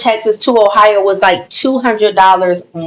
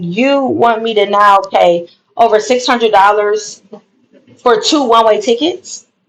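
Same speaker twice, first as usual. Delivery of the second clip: ordinary delivery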